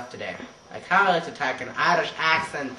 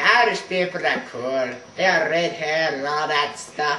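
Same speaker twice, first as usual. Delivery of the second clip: loud, put-on fake Irish accent; 3 semitones higher, 4 dB louder than usual. Deciding to talk in an Irish accent for the day: put-on Irish accent. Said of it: "I decided to talk in an Irish accent".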